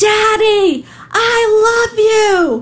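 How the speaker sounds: put-on very high, very slow, shrill, drawn-out little girl scream. Retelling a little girl at a window calling to her dad, imitating a girl screaming. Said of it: "she screams".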